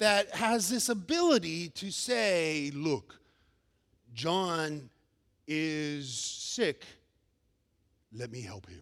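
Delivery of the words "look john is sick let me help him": very deep, quiet, hushed, lofty voice. Talking about how people see God, the speaker gives a line in God voice. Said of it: "That's my best God voice".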